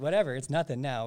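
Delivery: ordinary delivery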